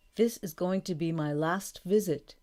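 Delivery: ordinary delivery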